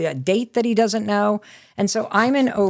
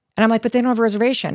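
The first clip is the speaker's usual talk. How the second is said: ordinary talk, nothing marked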